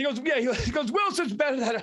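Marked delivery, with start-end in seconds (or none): 0.9-1.8 emphatic, heated sports-talk radio hothead style. Retelling a sports debate where hosts screamed: Mad Dog Russo impression. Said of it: "That's a good Mad Dog".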